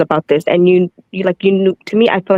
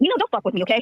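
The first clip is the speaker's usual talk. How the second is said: furious swearing, higher and quieter; 5 semitones higher, 8 dB quieter than usual. Arguing with another speaker who keeps asking questions: angrily cursing someone out. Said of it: "I still got cursed out".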